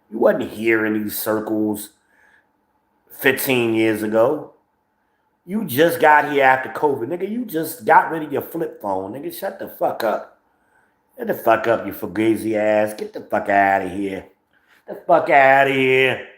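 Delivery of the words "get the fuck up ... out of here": practised put-on Italian accent, tough-sounding. Telling off a newcomer to the scene, in a put-on Italian voice. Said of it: "My Italian voice".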